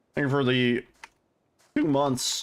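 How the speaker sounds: breaking voice, cracking partway. Thanking John for a two-month sub, voice cracking. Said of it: "voice crack".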